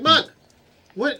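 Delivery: loud yelling, shouting. Yelling in character at mug from inside the force sphere: yelling. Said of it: "I'm yelling".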